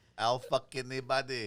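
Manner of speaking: put-on Filipino accent. Reading a written joke aloud on request: Filipino accent. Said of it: "read this now in your Filipino accent".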